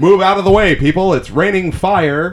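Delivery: put-on high, old-timey fifties-style shout. Doing live commentary on the Hindenburg disaster: shouting in a 1950s voice. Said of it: "Shouting in the nineteen fifties voice".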